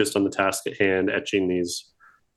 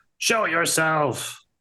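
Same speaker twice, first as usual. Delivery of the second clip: yelling, shouting, much higher pitch; 9 semitones higher than usual. A game master voices a character calling out someone who is hiding: yelling. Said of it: "Agamir continues to yell".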